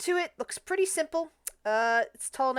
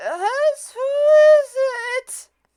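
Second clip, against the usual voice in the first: wavering, shrill, booming, drawn-out very high loud warbling; 11 dB louder than usual. In a fantasy game, the narrator voices someone answering a knock at the door: warbling voice. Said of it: "a warbling voice going".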